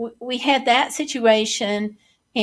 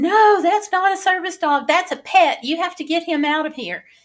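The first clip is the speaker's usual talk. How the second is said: shrill, screaming, scolding put-on woman's voice; 6 semitones higher than usual. Retelling being screamed at by a woman over a service dog, imitating a woman screaming. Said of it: "the woman was like screaming at me".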